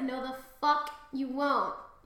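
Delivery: normal talking voice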